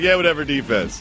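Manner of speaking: offhand, casual, half-hearted calling. Showing how players sometimes call out defense, half-hearted, not yelled. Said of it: "You don't yell it. It's just like".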